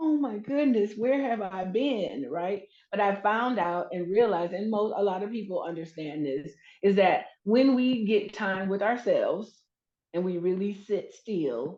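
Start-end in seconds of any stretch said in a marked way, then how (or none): 0.0-2.3 mock weeping, overwhelmed, tearful crying outburst. Retelling sitting among the charms and realizing something: retelling own past crying.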